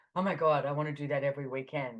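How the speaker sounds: plain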